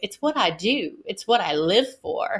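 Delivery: menacing villainess voice with swooping, swinging pitch. Quoting a video that used Ursula from The Little Mermaid; put-on menacing Ursula voice. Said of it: "she gets this kind of menacing voice".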